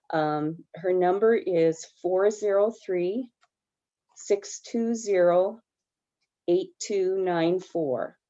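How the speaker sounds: very slow, deliberate pace. Reading out a phone number so listeners can write it down; said slowly. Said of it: "I'll say it slowly".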